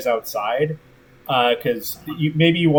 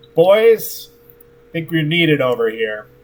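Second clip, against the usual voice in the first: loud shout projected over a crowd; 3 semitones higher, 4 dB louder than usual. Voicing a captain calling her crew over: shouting over a crowd. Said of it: "shouts over your head".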